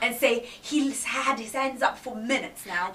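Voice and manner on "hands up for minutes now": ordinary talk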